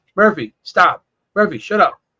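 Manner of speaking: normal talking voice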